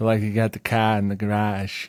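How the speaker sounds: Boston-accented voice. Demonstrating how people in Boston say words, Boston accent. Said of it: "with Boston".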